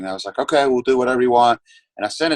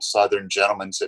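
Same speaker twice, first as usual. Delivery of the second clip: ordinary talk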